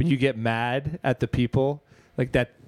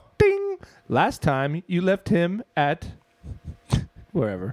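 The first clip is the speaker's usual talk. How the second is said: put-on voice assistant voice, higher; 5 semitones higher than usual. Playing a voice assistant answering a lost-son question: imitating Alexa's voice. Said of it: "I'm trying to do Alexa".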